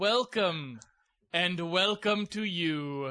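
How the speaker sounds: announcer-style delivery. Welcoming the audience to the Jeff and Casey show, in a ZomboCom announcer voice. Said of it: "I was doing Zombo".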